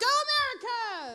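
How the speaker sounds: shrill, very high, loud shout. Retelling her own reply at dinner: retelling own yell. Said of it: "so I just yell".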